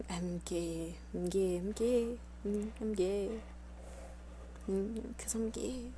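disgruntled whispered muttering. Showing how the whole stream will sound: disgruntled whispered muttering. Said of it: "disgruntled muttering of me whispering".

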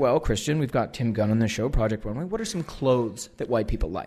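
ordinary delivery

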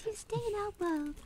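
high-pitched voice. Speaking on behalf of the Ice Fairies: high-pitched voice. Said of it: "What a high-pitched voice".

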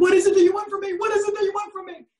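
very high, shrill, tearful, sobbing wail. Retelling being alone redoing a kitchen floor: retelling crying and screaming. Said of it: "I was bawling my eyes out, crying and screaming and going".

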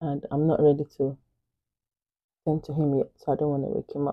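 hushed, soft, low-voiced, kept down. Filming a get-ready video while her baby is still asleep: really low voice. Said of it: "My voice is really low because my baby is still fast asleep".

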